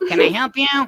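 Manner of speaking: cartoon voice, pitch pushed way up, very loud. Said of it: "I do it all the time".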